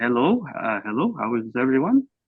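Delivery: put-on light touch of French accent, sing-song. Role-player describes his character entering the room and greets everyone; slight French accent. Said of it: "uh little bit of a French accent".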